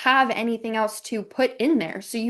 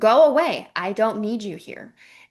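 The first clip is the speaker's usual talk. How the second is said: mock sharp, angry, snapping delivery; 3 dB louder than usual. Speaker describes a mother lashing out at her child: imitating an angry lash-out. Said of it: "the mom lashes out on the child".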